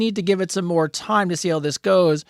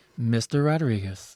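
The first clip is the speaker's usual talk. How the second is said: mock, really sexy put-on voice; 8 semitones lower, 5 dB quieter than usual. Telling what turns him on, he mimics someone saying his name, imitating a really sexy voice. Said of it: "in a really sexy voice goes".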